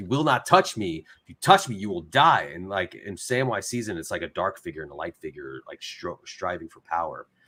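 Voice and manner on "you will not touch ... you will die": mock screaming at full force. Describing a film's ending, acting out Frodo screaming at Gollum, retelling Frodo's scream. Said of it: "he's screaming at".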